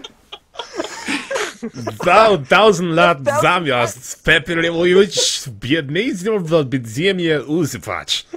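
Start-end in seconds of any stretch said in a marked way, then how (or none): 2.1-8.3 slow mock German accent. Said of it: "I put in a German accent for it".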